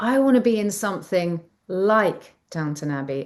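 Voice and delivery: ordinary talk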